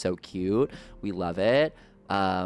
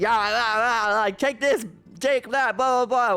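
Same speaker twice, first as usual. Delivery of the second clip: very high, raised, chaotic yelling; 6 dB louder than usual. Retelling how they fight in games together: imitating own yelling while fighting. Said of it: "we're yelling a little bit".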